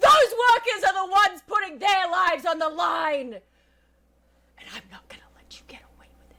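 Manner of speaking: high voice, swinging pitch. Acting a scene opposite the manager, told to raise your voice: raised voice. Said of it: "raise your voice".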